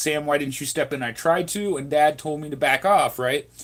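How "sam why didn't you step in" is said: normal talking voice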